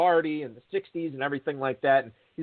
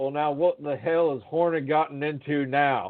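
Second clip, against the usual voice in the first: slow, stretched-out, drawn-out Southern drawl. Retelling what a former player said at the bar: imitating a Southern drawl. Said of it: "in his best Southern drawl".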